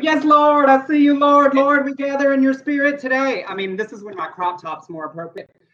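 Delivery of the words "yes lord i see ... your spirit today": high, earnest, heartfelt praising voice. Recalling praise and worship services, imitating a mock earnest worship leader. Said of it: "earnest praise and worship".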